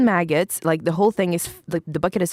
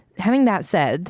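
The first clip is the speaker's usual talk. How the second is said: normal talking voice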